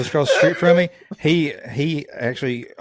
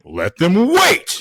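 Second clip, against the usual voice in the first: stately regal kingly voice, pitched up; 7 semitones higher, 4 dB louder than usual. Retelling a movie scene about a royal wedding: James Earl Jones voice. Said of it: "he's just James Earl Jones voices".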